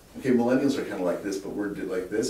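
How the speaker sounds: ordinary talk, nothing marked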